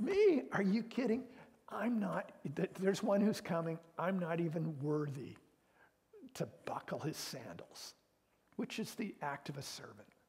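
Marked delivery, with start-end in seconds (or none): 0.0-7.9 loud, thick sarcasm with big swooping pitch swings. Retelling John's answer about the one who is coming: imitating John's sarcastic tone.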